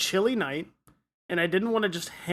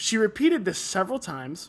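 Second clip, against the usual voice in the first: ordinary delivery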